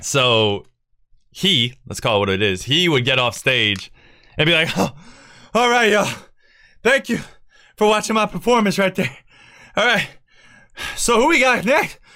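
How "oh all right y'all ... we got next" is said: mock very high, breathless, rushed host patter. Retelling what the host said after getting off stage: imitating someone out of breath. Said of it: "out of breath and everything".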